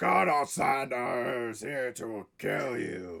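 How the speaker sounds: battle cry. Answering a player who asks how the war chief's battle cry sounds: battle cry. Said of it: "what does it sound like?".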